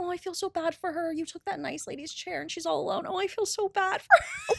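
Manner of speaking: high stage whisper. Retelling what teenagers said about the speaker: imitating someone half-whispering. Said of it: "I keep hearing them whisper".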